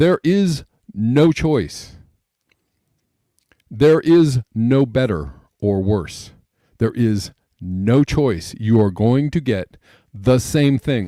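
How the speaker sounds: speaking slowly. Explaining the two-party system for people who can't understand, speaking slowly. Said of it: "I'm saying this slowly".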